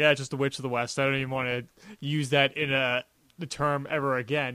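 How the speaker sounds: ordinary talk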